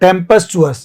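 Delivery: tempestuous with the pes syllable stressed. Explaining where stress falls, tempestuous stressed on the syllable pes. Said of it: "पी पे लगेगा ये".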